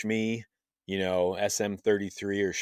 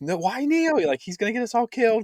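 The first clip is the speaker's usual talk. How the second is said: put-on very high, panicky child voices. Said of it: "all the kids are like".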